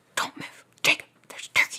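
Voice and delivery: put-on whisper-yell. Retelling a turkey hunt, warning a hunting companion not to move: a whisper-yell. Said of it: "Whisper yelling".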